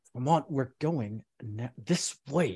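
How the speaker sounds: put-on talking through gritted teeth. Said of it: "talking through gritted teeth".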